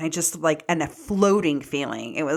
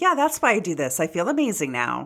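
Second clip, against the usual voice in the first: normal talking voice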